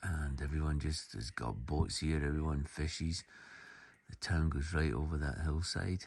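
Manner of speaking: speaking quietly, soft and hushed.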